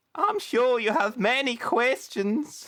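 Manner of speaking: weird, very high-pitched, chipper and peppy voice. Quoting a game character's line: imitating a weird peppy voice. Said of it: "He's very weird voice".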